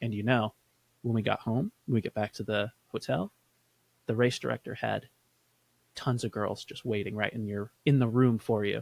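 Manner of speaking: secretive murmur. Retelling what he said about the race, repeating him in a lowered voice. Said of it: "he lowers his voice and he goes".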